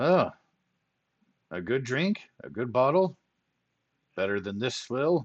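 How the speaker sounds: sudden spark of interest, perking up. Offered a drink in exchange for information, a character perks up. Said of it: "He starts to perk up and says".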